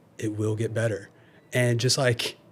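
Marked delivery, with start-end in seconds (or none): 0.2-1.1 acted whispering. Retelling a friend's comforting words after rehab: imitating a friend whispering. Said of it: "it was just her whispering to me".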